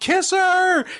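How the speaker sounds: mock yelling. Speaker recalls shouting at the tv during an episode: retelling a yell at the tv. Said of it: "I just was yelling".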